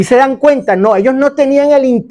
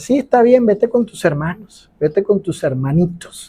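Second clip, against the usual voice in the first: mocking, sarcastic, jealous-sounding dismissive tone; 4 semitones lower, 6 dB quieter than usual. Retelling what a jealous aunt said on Sundays: imitating aunt's sarcastic tone. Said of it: "percibí ese sarcasmo de ella".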